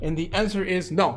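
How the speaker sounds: normal talking voice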